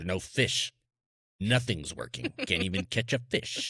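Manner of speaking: low, grumpy muttering grumble. Retelling own past words while fishing: imitating own grumpy fisherman voice. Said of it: "Is that how you sound when you're on the kayak?".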